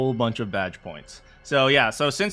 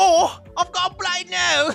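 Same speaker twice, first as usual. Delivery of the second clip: very high, fake, put-on British accent; 4 dB louder than usual. Trying out a line in different voices, in a put-on British accent. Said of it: "It's funnier in British".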